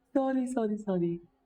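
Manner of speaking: very high, high-pitched voice, laughing through the words. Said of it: "Sorry, natawa ako".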